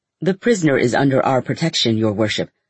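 ordinary delivery

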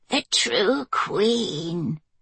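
ghoulish, ghastly, broken-voiced cracked echo. A caged woman, grinning, mimics someone's words in a ghastly, cracked voice. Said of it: "she mimicked in a ghastly, cracked voice".

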